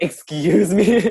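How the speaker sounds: loud, high yelled call-out. Retelling Claire's reply after being told there were no tables, retelling a yell. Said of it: "she yelled".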